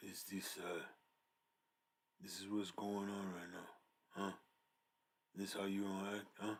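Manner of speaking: very deep, very quiet voice. Explaining how Boppy's voice mixed his uncle's tone: very deep Boppy voice. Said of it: "it was very deep".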